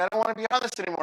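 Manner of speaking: play-acted scared, high, panicky pleading voice. Retelling a daughter's words on a rising roller coaster: imitating a panicking daughter. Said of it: "she's starting to panic".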